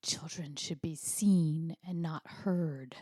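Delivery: put-on hissing voice. Retelling a mother's warning to a disruptive child at a talk: imitating a hissed warning. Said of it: "my mother hissed into my ear".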